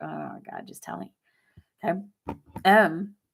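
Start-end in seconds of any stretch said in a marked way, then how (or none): 0.0-1.1 mock frustrated, exasperated whisper under the breath. Acting out waiting to be told something withheld: mock frustration. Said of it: "that's just, like, frustration".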